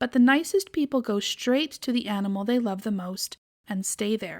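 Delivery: ordinary delivery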